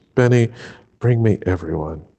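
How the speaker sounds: put-on very calm, even, steady voice. Retelling a film scene, giving an order to Benny: imitating a really calm voice. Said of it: "in a really calm voice".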